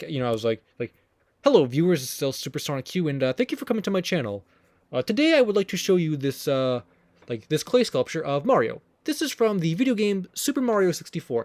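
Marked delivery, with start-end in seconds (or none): 1.4-11.5 put-on polite, proper, stiff, formal old-fashioned presenter tone. Speaker recalls opening channel videos ten years ago, imitating formal younger self. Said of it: "I'm sort of more formal with how I talk".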